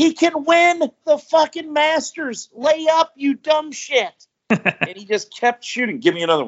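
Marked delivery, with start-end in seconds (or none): 0.0-4.3 mock, very high-pitched, drawn-out hollering yell. Recalling watching a movie with someone, retelling a yell at the TV. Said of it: "I was yelling at the TV".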